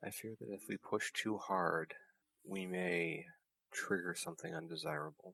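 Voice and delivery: very soft, barely audible, hushed voice. Voicing a character who answers an ally: very quiet voice. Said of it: "Pelham will respond very quietly".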